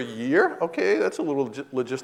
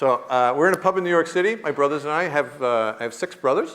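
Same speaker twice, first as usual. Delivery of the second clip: plain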